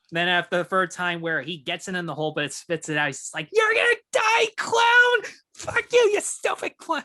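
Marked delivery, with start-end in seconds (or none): 3.5-7.0 very high, pissed-off, drawn-out furious yell. Retelling a scene where a golfer gets pissed off at a clown: imitating an angry yell at a clown. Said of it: "he gets pissed off at the clown".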